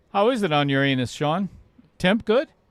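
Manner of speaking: ordinary delivery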